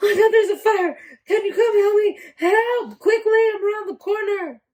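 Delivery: mock panicked voice. Asked what they would do in a fire, acting out a panicked call for help. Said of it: "And in a panic".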